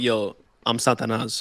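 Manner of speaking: put-on calm, low, quiet, even-toned menace. Asking whether the man said it calmly: imitating a calm threat. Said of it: "Did he tell you calmly".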